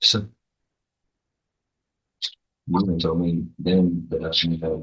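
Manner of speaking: mumbling, indistinct, hard to hear, words running together. Speaking to a listener about their earlier visit, mumbling. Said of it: "You're mumbling. I can't hear you".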